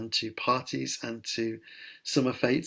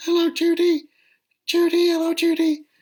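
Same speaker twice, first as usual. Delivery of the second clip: very high, shrill, loud, shrieking puppet voice; 9 dB louder than usual. A former Punch and Judy man recalls his act, Punch puppet voice. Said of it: "doing funny voices".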